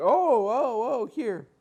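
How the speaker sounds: high, loud, flustered clerk voice. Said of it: "And the guy's like".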